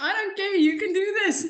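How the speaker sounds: laughing, excited burst.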